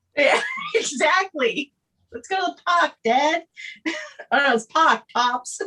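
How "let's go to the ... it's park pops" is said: put-on higher-pitched Boston accent. Voicing Lucas talking to his dad, Lucas with Boston accent. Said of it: "He's got some Boston accent".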